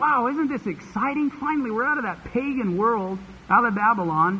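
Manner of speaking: high, excited, youthful cheering. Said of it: "the young people were shouting, going".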